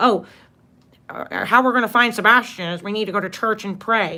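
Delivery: patronizing, superior, condescending lecturing tone. Imitating how he suggested going to church to pray: imitating a condescending tone. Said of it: "He's saying it in such a condescending way".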